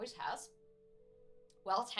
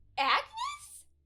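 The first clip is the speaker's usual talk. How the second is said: put-on very high, slow, excited girl's shriek. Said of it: "This girl just goes".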